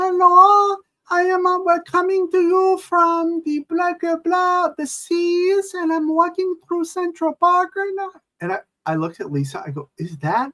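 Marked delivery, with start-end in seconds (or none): 0.0-8.1 crazy, very high squeak, "seas" drawn out. Retelling an outrageous woman walking behind you in central park, imitating her crazy high squeaky voice. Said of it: "she's got this like crazy high squeaky voice".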